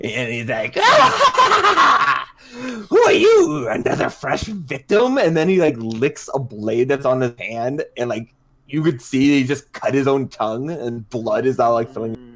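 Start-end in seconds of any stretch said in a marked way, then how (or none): 0.8-5.2 very high, very slow swooping cackling maniac voice. Retelling how a man flung open the door, cackling Psycho Edwards voice. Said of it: "like a cackling voice".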